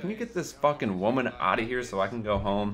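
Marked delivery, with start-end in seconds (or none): none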